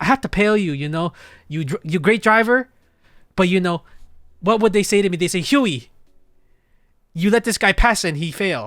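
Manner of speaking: put-on very thick Vietnamese accent. Retelling a failed driving test, the speaker quotes the tester: thick vietnamese accent.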